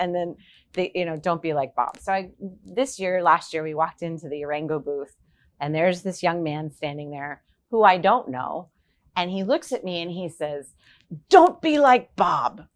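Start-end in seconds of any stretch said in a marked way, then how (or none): 11.3-12.5 put-on accent from the Dominican Republic. Retelling how a young man in the Orengo booth spoke to you, do Manny Diaz's Dominican accent. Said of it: "with this Dominican accent".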